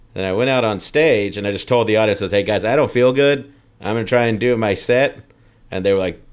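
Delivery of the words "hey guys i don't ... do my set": ordinary talk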